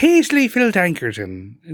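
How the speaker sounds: put-on British accent drifting toward Irish. Saying a made-up character's name in a put-on accent: British accent sounding Irish. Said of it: "it sounds more Irish than British".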